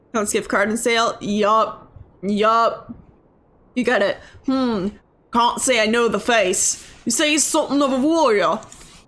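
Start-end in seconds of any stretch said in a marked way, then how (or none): 5.3-8.5 hard-to-place, loosely done fake British accent. Voicing a game character who doesn't know the face: put-on british accent. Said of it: "I don't know what kind of British this is".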